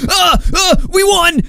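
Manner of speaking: high, shouting, mocking gloating voice.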